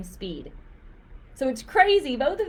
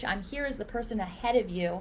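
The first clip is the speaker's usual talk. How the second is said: plain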